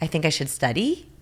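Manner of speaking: question-like rising tune at the end on study. Showing how an up at sentence end gives away power: rising at sentence end. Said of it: "That up at the end of our sentences".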